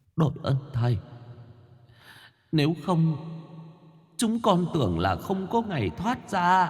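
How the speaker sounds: faint, thin, high half-whisper, nearly out of breath. A narrator voicing four ghosts who speak on seeing the master, faint, breathless half-whisper. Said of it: "cất lên giọng nói thều thào như sắp đứt hơi".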